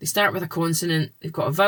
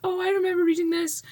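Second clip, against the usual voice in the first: much higher, fast, nostalgic voice. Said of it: "you can have these".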